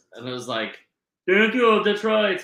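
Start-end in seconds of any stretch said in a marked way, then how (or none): 1.2-2.4 poor fake German accent, pitched up. Describing a draft pick from germany, quoting him in a bad german accent. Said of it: "that's not a good German accent".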